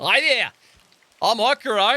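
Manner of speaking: put-on high young man's voice. Voicing a young man who greets the players: Okuro's voice. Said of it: "let me start over".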